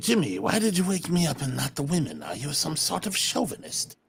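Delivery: whispering in character. Sneaking down the stairs in character, asking Jimmy: whispering in character. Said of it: "I whispered to Jimmy".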